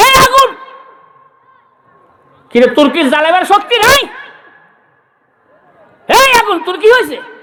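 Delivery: enraged, loud calling out.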